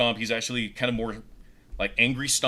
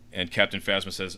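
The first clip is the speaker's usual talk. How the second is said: usual speaking voice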